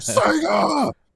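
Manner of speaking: very high, mild, acted advert-style yell. Correcting the other speaker, imitating a guy screaming the brand name. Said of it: "a guy literally screaming".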